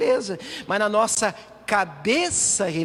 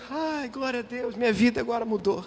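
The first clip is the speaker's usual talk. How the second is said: mock tearful, crying woman voice; 2 semitones higher than usual. Acting out the healed woman praising God: imitating a crying woman. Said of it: "a mulher tá chorando".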